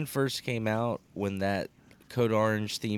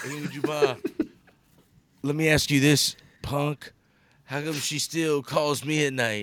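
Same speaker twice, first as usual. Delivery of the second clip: put-on drunk voice, slow, high, loose-tongued; 5 semitones higher, 4 dB louder than usual. Retelling a video of a wasted Matt Hardy talking to Punk: imitating drunk Matt Hardy. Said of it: "all fucked up, and he's, like, leaning back".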